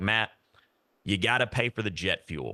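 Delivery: put-on Southern drawl. Speaker quotes a successful man's answer to his question, imitating a southern drawl. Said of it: "he has kind of like a Southern drawl".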